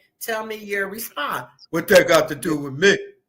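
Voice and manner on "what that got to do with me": put-on deep, loud voice. Replaying how the husband responded, in a put-on deep voice. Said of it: "listen to your deep ass voice".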